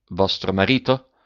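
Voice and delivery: ordinary talk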